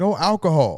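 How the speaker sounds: Caribbean accent impression. Retelling a convenience store clerk's answer, imitating a Jamaican or Haitian accent. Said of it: "he said it in his in his Haitian or Jamaican accent".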